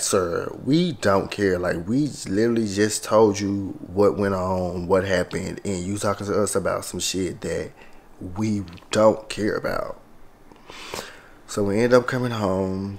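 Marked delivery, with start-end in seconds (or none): none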